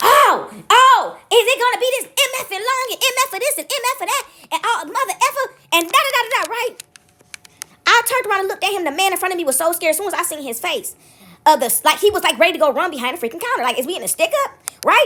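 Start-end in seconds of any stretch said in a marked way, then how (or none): 0.0-6.5 mock cursing screaming fit, high and drawn-out. Telling how a man cut in line at a gas station: imitating a man screaming. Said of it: "This man starts screaming".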